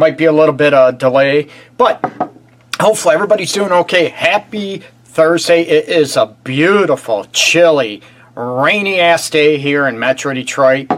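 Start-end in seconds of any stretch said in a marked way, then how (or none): 5.6-11.0 slow, dry, sarcastic tone. Host greeting viewers on a rainy Thursday, sarcastic. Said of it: "I'm being sarcastic".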